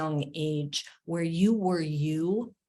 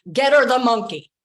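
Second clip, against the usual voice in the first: put-on very loud, bossy Italian grandmother accent; 7 semitones higher, 10 dB louder than usual. Quoting grandmother to the crying man behind the counter, bossy Italian grandmother voice. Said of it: "in her little bossy Italian voice".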